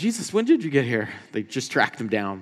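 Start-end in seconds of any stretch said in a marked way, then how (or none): 0.0-1.1 mock out-of-breath panting. Retelling the crowd asking jesus after tracking him down: imitating an out-of-breath crowd. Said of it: "They're all out of breath".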